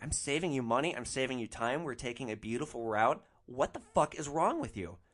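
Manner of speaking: ordinary delivery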